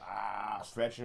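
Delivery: put-on creaky, rough old-person voice, stretching. Mocking how old people sound waking up: imitating an old person stretching. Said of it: "make fun of old people... be like".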